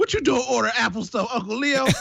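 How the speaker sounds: very high-pitched, ranting, haranguing delivery. Imagining a voice assistant that rants at him, imitating Odocta ranting. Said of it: "rant at you every 5 seconds".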